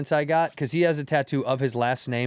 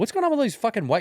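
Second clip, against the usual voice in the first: put-on annoyed voice, higher; 9 semitones higher than usual. Retelling a wife's complaint at a Lakers game: imitating annoyed wife. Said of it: "She was, like, annoyed".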